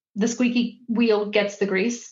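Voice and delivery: normal talking voice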